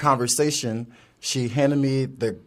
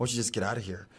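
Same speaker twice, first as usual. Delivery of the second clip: put-on muttering under the breath, quieter; 3 semitones lower, 11 dB quieter than usual. Retelling what a stranger said from the corner: imitating muttering under his breath. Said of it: "Under his breath".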